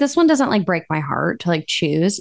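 normal talking voice

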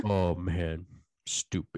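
put-on old man's voice. Imitating Sylvester Stallone reacting to old footage: imitating Sylvester Stallone. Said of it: "he talks more like this".

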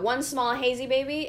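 ordinary delivery

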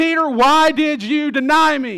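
angry, accusing, confronting tone, loud and slow. Picturing how a confrontation might be imagined, angry confronting tone. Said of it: "he confronts him in this angry tone".

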